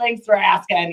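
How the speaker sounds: angry persona voice. Showing how a stage character talks: put-on angry character voice. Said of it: "it's kind of like an angry type person".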